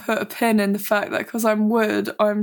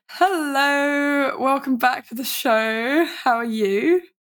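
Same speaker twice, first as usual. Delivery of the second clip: a bit husky, drawn-out delivery; 4 semitones higher than usual. Opening the show and greeting the other speaker, husky voice. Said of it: "My voice is a bit husky".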